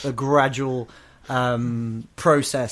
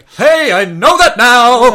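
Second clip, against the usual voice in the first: very high, loud, with every word stretched out; 10 semitones higher, 14 dB louder than usual. Quoting a favourite movie line, in a Nicolas Cage impression. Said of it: "there's a great Cage line in that bit where he's like".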